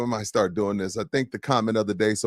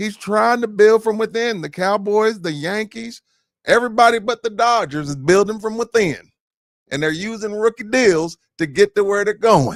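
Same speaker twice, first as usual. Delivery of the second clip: put-on cowboy accent, very high-pitched and loud; 12 semitones higher, 6 dB louder than usual. Putting the cowboy hat on to defend Dallas to the others: put-on cowboy accent. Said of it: "your accent even flew out".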